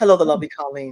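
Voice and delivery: put-on dignified grown-up voice. Joking about a new look, greeting viewers: put-on mature voice. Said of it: "let me get my mature voice on".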